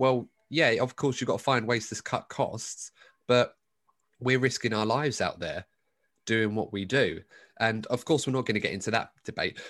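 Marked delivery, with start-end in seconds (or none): none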